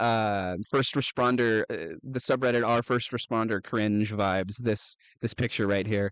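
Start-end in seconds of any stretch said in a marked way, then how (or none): none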